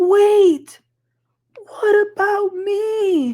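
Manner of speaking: very high, obnoxious, drawn-out voice, word me stretched. Recapping a scene as someone stands up in the corner, imitating Brittany's obnoxious voice. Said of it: "a little obnoxious voice in the corner".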